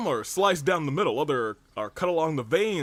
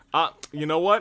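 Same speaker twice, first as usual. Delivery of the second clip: ordinary talk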